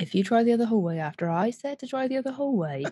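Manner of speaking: soft, low-key, motherly voice. Friends in a hallway deciding which way to go, in a mom voice. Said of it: "That sounded like a mom voice".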